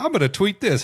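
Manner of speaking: put-on gleeful like a kid. Retelling a mushroom vision, quoting the archangel: gleeful like a kid in a candy store. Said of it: "he was just kid at a candy store".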